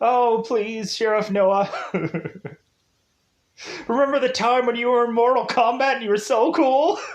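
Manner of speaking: play-acted high sobbing, begging tone. Retelling a woman pleading with a sheriff over a ticket, imitating her crying. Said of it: "all of a sudden she's like crying".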